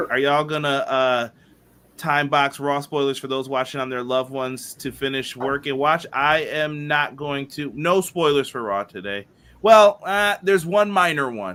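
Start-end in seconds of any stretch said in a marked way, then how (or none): none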